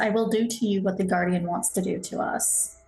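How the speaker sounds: muttered grumble under the breath, half to oneself. In a roleplay scene, a character speaks to another, muttered under her breath. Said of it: "She just under her breath says".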